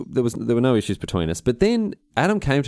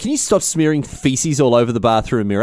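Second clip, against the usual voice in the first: usual speaking voice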